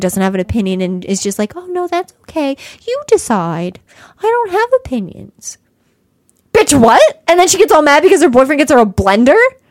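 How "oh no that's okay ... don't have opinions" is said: meek, submissive, swooping high voice. Complaining about a character who turns submissive in the next scene: mocking a quiet voice. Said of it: "she's just quiet".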